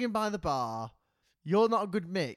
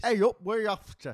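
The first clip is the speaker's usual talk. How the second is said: poor, unconvincing, put-on Yorkshire accent; 4 dB louder than usual. Retelling meeting friendly lads from yorkshire: bad yorkshire accent. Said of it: "was that not a good accent".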